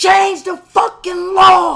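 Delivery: imitated yell. Retelling yelling at a cop over a doorbell camera: imitating himself yelling. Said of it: "I just started yelling".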